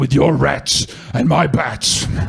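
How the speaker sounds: rough, creaky, gravelly caped-hero growl. In a role play where Batman finds Brady at his mum's apartment, doing a Batman voice. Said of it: "You started doing a Batman voice".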